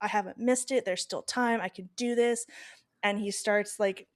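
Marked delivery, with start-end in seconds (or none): 0.0-2.5 play-acted, bursting with overjoyed happy excitement. Retelling the story, the speaker voices the man at the window, acting out excited joy. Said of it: "he just is so excited, so happy".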